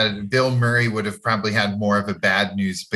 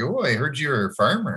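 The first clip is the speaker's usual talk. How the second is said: put-on Midwestern Minnesota accent; 4 semitones higher than usual. Quoting what a man says in a scene: Minnesota accent. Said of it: "he kind of has like a Minnesota accent when he says it too".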